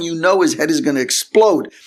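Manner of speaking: normal talking voice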